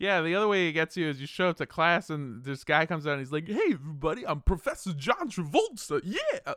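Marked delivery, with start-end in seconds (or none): 3.5-6.5 pitch swinging all over, unsteady and off. Acting out a teacher introducing himself to a class: John Travolta impression. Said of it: "you shouldn't do impressions".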